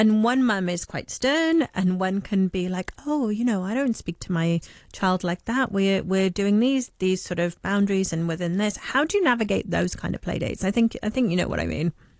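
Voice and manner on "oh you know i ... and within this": ordinary talk, nothing marked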